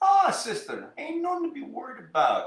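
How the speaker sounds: put-on very high, sing-song, swooping Jamaican accent. Retelling a hospital scene, the visitor speaking to the woman: put-on jamaican accent. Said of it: "he has that Jamaican accent".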